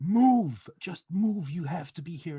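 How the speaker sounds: acted, high, demanding, barking shout. Speaker retells a man shouting at him on the phone, imitating someone shouting demands. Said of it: "started shouting at me on the on the phone like he was demanding".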